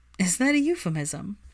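ordinary delivery

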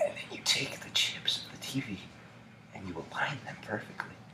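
very soft, close-in ASMR whisper, as quiet as possible. Parodying asmr after being told to whisper even quieter: very quiet asmr whisper. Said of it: "You gotta whisper even quieter".

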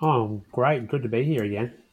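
bored, dutiful, flat, unenthused delivery. Answering the podcast host's welcome during the intro: unenthused. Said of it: "It sounded so genuine just then".

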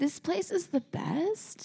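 "best" rises, statement turned question. Speakers mock LA speech habits, saying a statement: rising question intonation. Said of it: "saying it with like a question".

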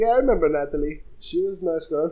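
put-on heavy French Canadian accent, laid on thick. Retelling what the video game store owner said on the call: thick French Canadian accent. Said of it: "a really thick French Canadian accent".

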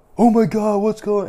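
high, freaked-out, panicked outburst. Retelling own reaction to something strange in the ear: imitating own past panic. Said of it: "And I freaked out".

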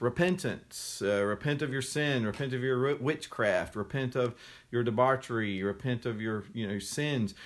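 ordinary talk, nothing marked

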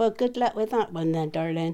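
ordinary talk

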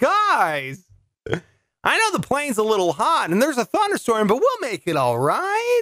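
sing-song cartoon voice, high, swooping, guys stretched. Joking about a late flight, doing Tom Hanks as Woody. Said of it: "my Woody version of Tom Hanks".

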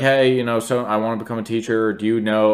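ordinary talk

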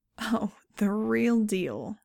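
slow, heavy sarcastic drawl, dripping sarcasm. Reading a reply to an offer that guarantees safety: dripping sarcasm. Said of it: "sarcasm dripping".

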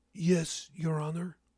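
stammering. A defendant answers the judge, who asks if he understands the charges: stammering. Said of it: "he stammered".

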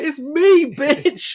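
loud, high-pitched, dramatic delivery. Joking about a better ending, imitating Sagat. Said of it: "if Sagat was like".

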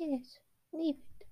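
very high-pitched, hushed whisper. Narrating a scene where Mort answers King Julian, Mort whispering. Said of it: "Mort whispers".

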